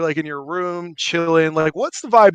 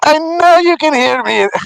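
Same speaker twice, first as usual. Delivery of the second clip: very high, loud, squeaky gnome voice; 11 semitones higher, 8 dB louder than usual. Speaker doing a bit about little footsteps on the roof, in a gnome voice. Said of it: "Every time I do the voice".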